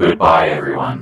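mechanical, robotic voice. Asked what a robot would say, the speaker says goodbye in a robot voice. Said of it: "It has a robot voice".

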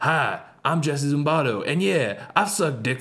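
hyper-aggressive, over-the-top macho voice, swooping. Showing how his over-the-top intro was going to start, hyper-aggressive, hyper-masculine voice. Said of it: "hyper-aggressive, hyper-masculine sort of like voice".

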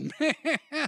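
high, wide, laughing groan.

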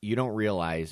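plain

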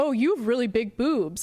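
mock-sarcastic, put-on sarcastic tone. Speaker quotes a woman's past reply to his Instagram story, retelling a sarcastic remark. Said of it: "like sarcastically".

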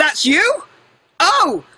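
high, terrible American accent.

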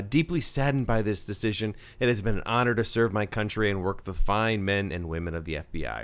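ordinary delivery

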